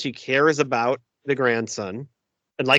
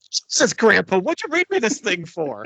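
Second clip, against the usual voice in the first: mock, worked-up, high, swooping outburst; 7 semitones higher than usual. Sharing a favorite movie line, imitating Fred Savage's worked-up outburst. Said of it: "when he gets all worked up".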